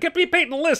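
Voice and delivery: play-acted, very high-pitched, forceful, demanding voice. Retelling the casting director slamming his fist on the table, mock forceful demand. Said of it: "slammed his fist on the table and said".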